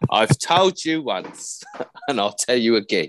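put-on slow, deliberate Cockney accent. Joking about a baby's impressions, doing Michael Caine: Michael Caine voice. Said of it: "she does a mean Michael Caine".

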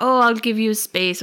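put-on British accent. Retelling a book scene, voicing the Count: the Count's British accent. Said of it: "This is my accent".

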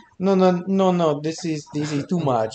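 put-on old Italian man voice. Acting out a reaction to the drink, in an old italian man voice. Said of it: "You sound like an old ass Italian man".

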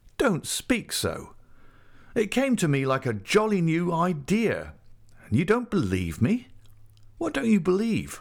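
firm, insistent, pressing tone. A man urges a woman not to speak that way; insistent. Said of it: "he insisted".

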